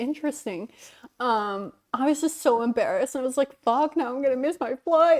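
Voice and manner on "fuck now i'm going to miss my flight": frantic, stressed, panicked swearing outburst. Retelling dropping a backpack while rushing to a flight: retelling own stressed panic. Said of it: "I was so fucking stressed and panicking".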